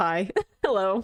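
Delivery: put-on flat, deadpan voice. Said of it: "The deadpan delivery of Thorfinn just being like".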